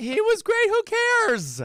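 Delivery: shrill, very high, very loud, swooping voice. Talking about performers in a show, with the voice gone high. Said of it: "Do you notice how high your voice got?".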